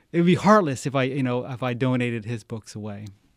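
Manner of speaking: ordinary talk, nothing marked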